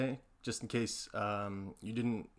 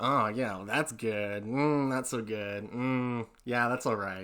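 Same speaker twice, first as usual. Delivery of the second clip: gravelly, stretched-out voice. Imitating a comedian judging things: poor Louis C.K. impression. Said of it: "a very poor man's impression".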